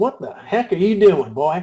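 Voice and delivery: put-on plainspoken speech in a Texas accent. Retelling what Tom said to the pacing Peter, Tom's Texas accent. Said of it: "as only Tom can do with his Texas accent".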